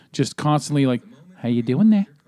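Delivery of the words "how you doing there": put-on nice, smooth New Zealand accent. Imitating a son who kept doing a movie character voice: Taika Waititi's Korg voice. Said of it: "doing that Taika Waititi's voice as Korg".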